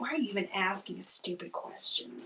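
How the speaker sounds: put-on grumpy, cranky, put-out baby voice. Speaking for a fussing baby after another speaker's joke: voicing a cranky baby. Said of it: "She's like".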